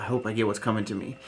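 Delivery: whispered voice. Retelling a scene from an episode, the speaker quotes a woman: retelling a whisper. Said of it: "She whispers".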